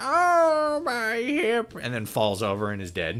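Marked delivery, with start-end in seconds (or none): 0.0-1.7 put-on very high little-old-lady voice, long drawn oh. Joking about an imagined game where an old lady appears: little old lady voice. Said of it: "And she's like".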